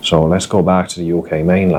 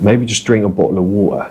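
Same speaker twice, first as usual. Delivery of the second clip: Cockney East London accent. Showing how people from East London talk: Cockney accent. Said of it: "you typically talk with a, with a Cockney accent".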